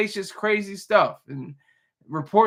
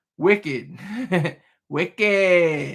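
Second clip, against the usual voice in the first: put-on Boston accent with wicked drawn out. Trying out a slang word in a Boston accent. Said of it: "In the in the Boston accent".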